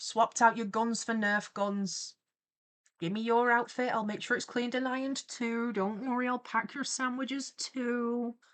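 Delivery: ordinary talk, nothing marked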